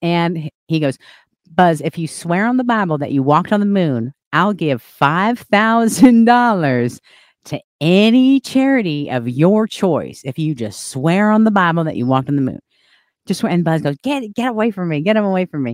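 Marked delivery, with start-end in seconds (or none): 1.5-13.5 put-on insistent talk in a Southern accent. Retelling a man pressing a moonwalker to swear on the Bible: Southern accent impression. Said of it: "He has like this Southern accent".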